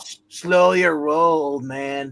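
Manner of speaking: slow, stretched-out, put-on surfer dude drawl. Playing a surfer dude and telling another speaker to quit: put-on surfer dude voice. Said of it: "And I'm like the surfer dude".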